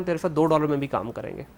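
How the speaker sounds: ordinary talk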